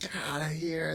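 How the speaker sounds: mock pissed-off, angry, dismissive tone. Describing characters who are already angry at someone: imitating angry characters. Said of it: "They're pissed at him".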